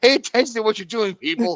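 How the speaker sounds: mock very high, shrill, loud yell. Retelling shouting at the characters during a kiss scene: retelling own shout. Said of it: "I'm shouting into the camera going".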